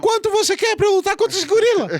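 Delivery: very high, thin boxer voice. Acting out a boxer offering money to fight a gorila: thin high Mike Tyson voice. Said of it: "a voz do Mike Tyson é bem fininha mesmo".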